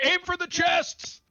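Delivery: loud yelling in a character voice. Voicing a character calling out during a fight: shouting in character. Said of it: "Isar just shouts".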